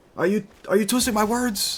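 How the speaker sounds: very high-pitched, furious, angry shouting. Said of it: "I'm using my mouth to yell".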